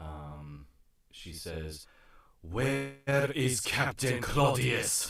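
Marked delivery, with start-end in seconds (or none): 2.4-5.1 loud, high call projected across a crowd. A game narrator voices a woman calling out to the crowd, much louder than usual. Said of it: "in a voice much louder than Penelope has ever heard her speak".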